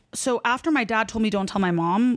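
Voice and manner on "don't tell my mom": usual speaking voice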